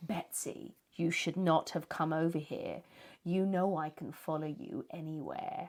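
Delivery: hissed, demonic voice. Telling a haunting story, voicing the spirit at night; demonic hissing voice. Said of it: "they hear a demonic voice hissing".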